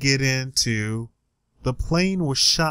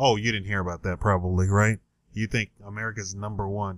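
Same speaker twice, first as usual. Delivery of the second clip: dry, flat, deadpan mocking sarcasm; 5 semitones lower, 4 dB quieter than usual. Mocking people who think america is number one: sarcastic. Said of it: "I'm being sarcastic".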